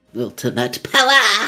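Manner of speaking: put-on very high, childlike voice of a young kid. Voicing a character in the game: sounding like a five-year-old. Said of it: "Why did it sound like a five-year-old?".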